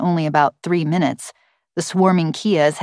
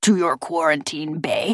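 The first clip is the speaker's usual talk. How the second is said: plain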